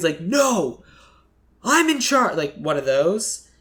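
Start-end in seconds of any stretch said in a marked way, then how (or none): 0.2-2.4 high, angry outburst. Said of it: "getting really angry".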